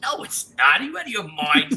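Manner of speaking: put-on heavy New York accent. Retelling own reply to someone's claim: strong new york accent. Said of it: "you hit that New York accent hard".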